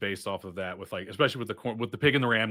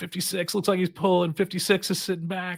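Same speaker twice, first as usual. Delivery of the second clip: mock kids' yelling, much higher and louder; 9 semitones higher, 4 dB louder than usual. A coach recalls kids shouting about a player's sloppy stance, imitating kids yelling. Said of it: "And they would just yell out".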